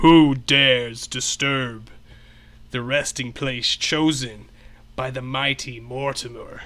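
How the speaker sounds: thundering, loud, booming voice. A voice from nowhere challenges the group passing through, booming voice. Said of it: "you all of a sudden hear a booming voice".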